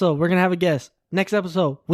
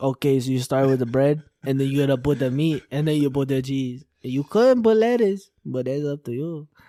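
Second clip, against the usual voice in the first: fake, off-target, put-on Mexican accent; 5 semitones lower than usual. Explaining jokingly how to make a sandwich: put-on Mexican accent. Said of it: "I don't know why I did a Mexican accent".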